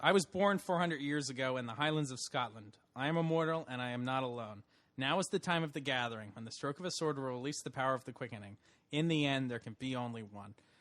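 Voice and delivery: ordinary talk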